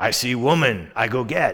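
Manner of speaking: slow, dim-sounding caveman talk. Retelling the story of Samson to an audience, Samson as a caveman. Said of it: "he talked like a caveman".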